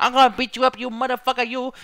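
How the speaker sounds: put-on high, loud, yelling small-child voice. Mocking how a wrestler talks, imitating Brock Lesnar like a little kid. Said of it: "Brock talks and it sounds like a fucking little kid".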